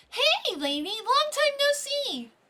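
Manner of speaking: squeaky put-on high voice. Voicing another character's greeting to a lady: high-pitched cracking voice. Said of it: "my voice keeps cracking when I try to do a higher-pitched voice".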